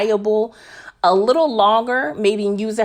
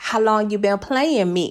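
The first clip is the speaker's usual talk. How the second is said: clumsy, bad put-on West Coast accent. Retelling a TV scene where Franklin confronts someone: bad West Coast accent. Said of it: "another bad rendition of the West Coast accent".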